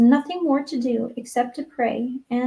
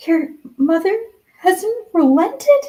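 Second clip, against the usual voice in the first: high, gasping, caught-off-guard voice; 7 semitones higher, 4 dB louder than usual. A girl sees her friend's dejected face and asks: gasped. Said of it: "she gasped".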